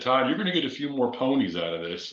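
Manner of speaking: put-on British accent. Retelling what the installer of the plugs said: imitating a british accent. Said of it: "he's a British guy in a British accent".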